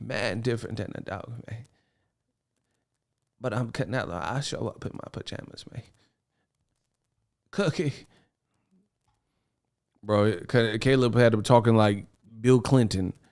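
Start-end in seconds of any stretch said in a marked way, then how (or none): 0.0-7.9 breathy, shaky put-on voice, quivering, half whispered. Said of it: "with the Terrence Howard voice".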